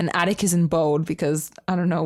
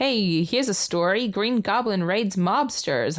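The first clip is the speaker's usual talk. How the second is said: best-attempt put-on New York reporter accent; 2 semitones higher than usual. Voicing Daily Bugle reporters with a story, in a put-on New York accent. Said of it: "That's my best New York accent".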